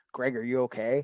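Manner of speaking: ordinary talk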